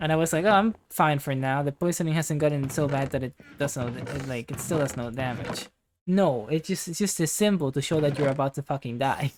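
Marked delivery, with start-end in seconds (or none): none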